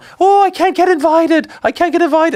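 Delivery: put-on very high crying wail in a British accent. Picturing Strickland crying into his phone, the speaker does a British-accented Strickland impression. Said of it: "I don't know why I have a British accent there".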